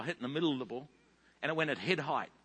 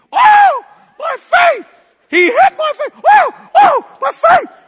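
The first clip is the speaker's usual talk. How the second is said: piercing, high-pitched, shrill, loud screaming cries; 23 dB louder than usual. Retelling how a woman with a mark on her face screamed, retelling her screaming. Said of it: "she is screaming".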